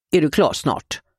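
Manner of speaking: stern, hard-edged, harsh tone. Narrator reads a man who crept up behind a woman asking if she's done; hard voice. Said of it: "Frågade han med hård röst".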